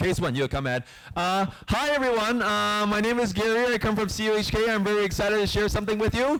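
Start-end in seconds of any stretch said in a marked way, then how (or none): 1.7-6.4 high-pitched, eager, student-presenter style voice. A speaker demonstrating to young students how one might introduce themselves, high-pitched. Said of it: "if I could just demo for you".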